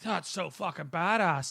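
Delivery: put-on Surrey accent. Quoting their own fifteen-year-old self, in a Surrey accent. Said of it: "Was that a Scottish accent you just did there?".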